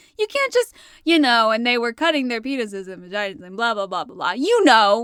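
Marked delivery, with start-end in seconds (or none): 1.5-4.3 put-on casual, throwaway, nonchalant, offhand tone. Teasing another speaker by imitating their line: imitating a nonchalant tone. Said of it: "you can't say it with that tone of voice".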